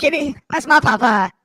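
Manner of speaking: put-on cartoon character voice, loud and slow. Answering a remark that the voice sounds like a cartoon: Cartman voice. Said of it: "it's kind of Cartmanish".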